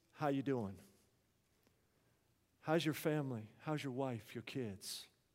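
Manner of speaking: quiet, calm delivery. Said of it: "But in a calm voice".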